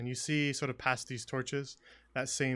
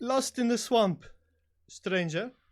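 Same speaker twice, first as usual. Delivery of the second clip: very high, raised voice calling out across distance; 10 semitones higher, 7 dB louder than usual. Voicing a swamp figure greeting an approaching traveller: calling out to a stranger. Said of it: "calls out to you and says".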